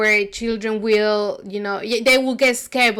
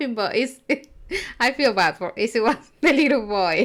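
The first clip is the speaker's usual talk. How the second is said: speaking through laughter. Reacting to hearing that a little boy cried from fright, laughing while talking. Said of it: "I don't know why I'm laughing".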